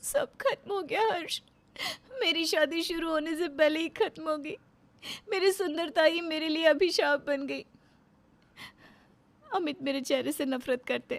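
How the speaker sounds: crying while talking, tearful. A woman confiding in a psychologist, crying while talking. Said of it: "तुम रो रही हो?".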